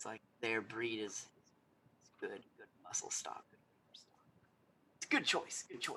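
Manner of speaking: sly, hushed, breathy whisper. Retelling a man leaning forward to comment on the hunting party, whispering. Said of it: "He goes and whispers".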